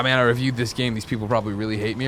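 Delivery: plain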